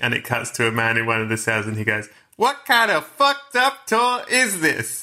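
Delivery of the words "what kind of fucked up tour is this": very high-pitched, slow, drawn-out tourist voice. Retelling a bit from the film The Rock: voice of a tourist in The Rock. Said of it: "it involves me doing a voice".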